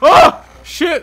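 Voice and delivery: startled, frightened shriek, shrill, very high, very loud. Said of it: "You sounded like Shaggy when you screamed".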